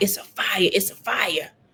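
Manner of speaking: mock restrained, mild, stretched drawn-out scream. Retelling how an aunt screamed about a fire at night: imitating someone screaming. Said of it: "she was screaming, like".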